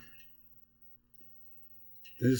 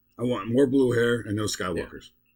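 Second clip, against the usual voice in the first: normal talking voice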